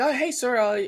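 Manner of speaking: pushy, eager store clerk voice, high pitched.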